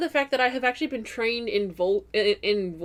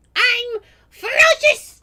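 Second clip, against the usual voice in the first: ear-splitting, very high, very loud squeal; 9 dB louder than usual. A character protests at being called adorable, in a painfully high-pitched voice. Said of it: "It sounds like it should hurt given how high it is".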